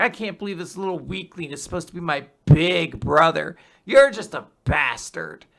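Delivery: put-on cocky, swaggering voice. Retelling a chapter, quoting Loki: imitating cocky Loki. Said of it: "Loki is just kind of cocky".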